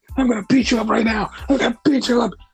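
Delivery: put-on angry voice. Retelling an interview confrontation, mock-angry threat. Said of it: "Seth got really angry and he's like".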